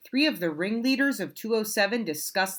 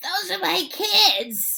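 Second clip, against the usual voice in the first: very high, slow, squeaky, scratchy, drawn-out voice; 10 semitones higher, 3 dB louder than usual. Reading a story, Miss Nelson sees her class out of school: scratchy voice. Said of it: "she said in a scratchy voice".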